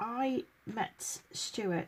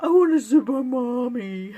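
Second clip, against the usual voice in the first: put-on cartoon dog voice, higher and louder; 4 semitones higher, 13 dB louder than usual. Imitating the pet husky who talks: Scooby-Doo voice. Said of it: "in his Scooby-Doo voice".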